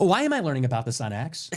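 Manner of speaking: mock stuck-up, bitchy, snooty and put-out voice. Contrasting how the tweet could have been worded: imitating Candace Owens' snooty tone.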